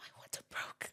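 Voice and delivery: hushed whisper. Recounting own words to him back then, in a whisper. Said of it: "Like I was whispering".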